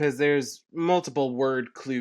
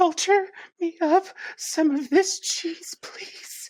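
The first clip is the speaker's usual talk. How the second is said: frightened, breathy whisper. Directed to read as if in a horror movie, about to be stabbed: horror victim about to be stabbed. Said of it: "read this as if you're in a horror movie and you're about to be stabbed".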